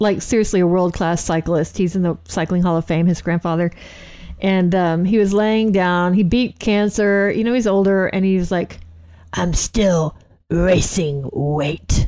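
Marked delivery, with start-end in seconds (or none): 9.3-12.1 rough, gravelly, low voice, very slow drawl. Retelling what a friend's grandfather said after beating cancer: imitating grandfather's gravelly voice. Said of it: "like, a gravelly voice".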